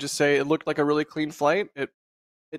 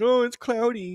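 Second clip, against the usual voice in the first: high, whiny mock baby voice. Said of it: "whining and screaming like a little baby".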